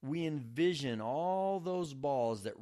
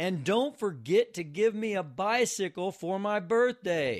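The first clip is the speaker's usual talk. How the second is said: sudden, loud, high-pitched shout; 5 semitones higher, 7 dB louder than usual. A little boy saying his bedtime prayers suddenly looks up, shouting. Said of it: "he looked up and he shouted".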